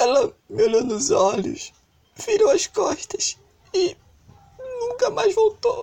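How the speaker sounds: tearful, choked-up voice cracking, very high. Telling a radio host that his wife left him: getting emotional, voice breaking. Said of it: "Desculpa, eu me emociono".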